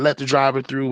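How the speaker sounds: put-on military-style barking. Retelling pushing through a crowd to let the driver in: retelling own yell. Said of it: "I'm yelling at the".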